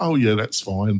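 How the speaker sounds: play-acted, very firm, steady, unbending tone. Retelling the repairers' reply about the unfinished Mac repair, imitating a very firm voice. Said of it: "Very firm voice saying".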